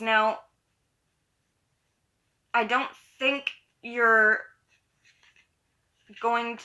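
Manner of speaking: speaking through hiccups. Giving a tarot reading to Scorpios, hiccuping. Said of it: "sorry, I have the hiccups".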